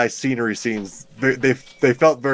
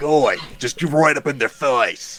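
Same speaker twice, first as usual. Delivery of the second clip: put-on Australian wildlife presenter voice, higher; 3 semitones higher than usual. Pitching a Steve Irwin type of wizard rival, Steve Irwin impression. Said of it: "more Steve Irwin, though".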